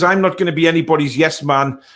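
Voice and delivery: ordinary talk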